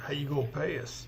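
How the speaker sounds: soft, mumbled aside under the breath. Asking the Ripper doctor about payment, in character: said under my breath. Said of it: "I say under my breath".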